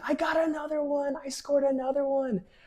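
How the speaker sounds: put-on very high screaming child's shout. Retelling scoring a goal as a little kid, imitating own childhood screaming. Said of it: "I was screaming".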